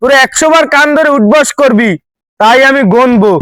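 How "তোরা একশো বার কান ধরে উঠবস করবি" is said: ordinary talk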